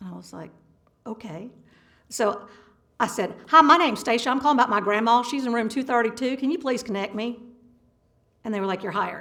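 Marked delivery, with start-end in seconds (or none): 3.5-7.4 put-on Texas accent. Asked in a job interview to do a Texas accent, doing a phone call in it. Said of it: "can you do a Texas accent?".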